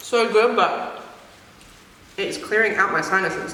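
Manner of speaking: muffled, chewing, talking through a mouthful of food. Speaker eating chili while talking about manners, speaking with mouth full. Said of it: "speaking with her mouth full".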